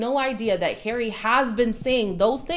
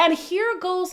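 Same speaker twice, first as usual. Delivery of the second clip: ordinary talk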